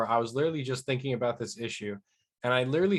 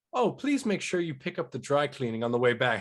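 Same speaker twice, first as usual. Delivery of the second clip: put-on sarcastic butler voice. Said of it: "that Alfred sarcasm".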